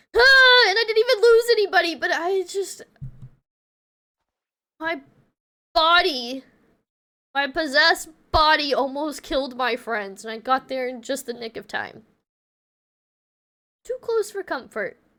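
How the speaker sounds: tearful, crying while talking. Ending the stream after a really hard stream, crying while talking. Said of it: "I'm already crying again".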